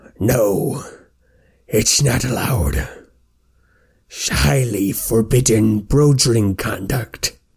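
resounding, booming troll creature voice. A troll answers the player's question from behind them: booming troll voice. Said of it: "a booming voice come from behind you".

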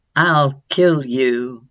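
composed, level tone. A man towering over a cowering woman and baby threatens them; calm and even. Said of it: "but his voice was calm, and even now".

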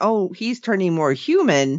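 ordinary talk, nothing marked

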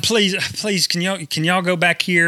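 mock-crying pleading voice. Retelling your plea to the donkeys back then, retelling a crying plea. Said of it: "because I'm crying".

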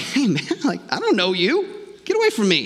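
casual, offhand, worldly talk with swooping pitch. Imagining how Jesus would talk if he spoke the way the world does. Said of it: "Jesus is like".

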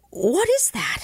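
abrupt, sudden high-pitched outcry. Henry, sitting apart at supper, rises and cries out suddenly. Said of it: "rose up and cried out suddenly".

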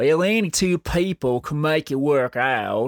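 slack-jawed yokel character voice. Quoting a piece of relationship advice in Cletus the Slack-Jawed Yokel voice. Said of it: "I'm gonna change the voice I do that in".

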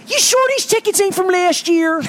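put-on high Baltimore woman's accent. Retelling a woman questioning your tickets at Wise Markets, use a Baltimore accent. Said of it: "Baltimore accent".

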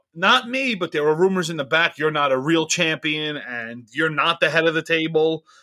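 ordinary talk, nothing marked

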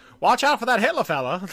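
put-on very loud, shrill old-timey 1920s voice. Repeating a remembered line a friend used to say, in an old-timey 1920s voice. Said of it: "his old-timey, like, 20s voice".

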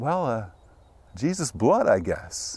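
tentative, hesitant, unsure tone. Retelling how she answered his question, the speaker imitates her hesitant answer. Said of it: "kind of in a little bit of a hesitant voice".

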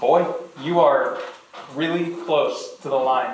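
ordinary talk

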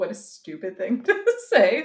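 swooping voice, laughing through the words. Rating a book in a discussion, reacting to their own remark; laughing while talking. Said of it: "I'm laughing myself".

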